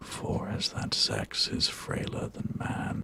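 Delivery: raspy voice. An actor delivers a line while a listener comments on the take, with a real rasp. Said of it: "he's got a real rasp there".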